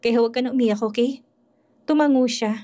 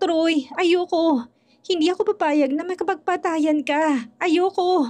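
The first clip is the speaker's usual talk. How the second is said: frantic, out-of-control, high, drawn-out hysterical outburst; 6 semitones higher than usual. Troy's sweetheart pleads with Troy, hysterical. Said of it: "Nagwala na talaga siya".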